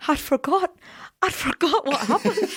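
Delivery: put-on Scottish accent. Speaker retells what a young guy behind them at a musical said, Scottish accent. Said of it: "it was like in a Scottish accent".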